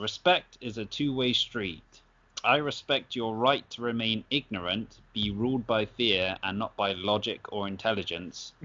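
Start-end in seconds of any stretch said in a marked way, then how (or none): none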